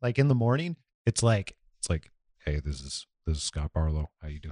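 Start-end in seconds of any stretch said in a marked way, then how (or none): 2.4-4.5 extra low-pitched voice, much quieter. Podcast host showing how his voice sounds in the morning, extra low voice. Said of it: "Like extra low".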